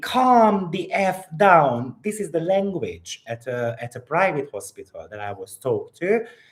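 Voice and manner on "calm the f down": very slow, drawn-out, high, loud scream. Retelling how the anesthesiologist spoke before surgery: imitating someone screaming. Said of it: "she was screaming at me".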